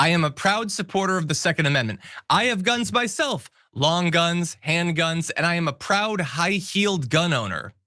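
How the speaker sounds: ordinary delivery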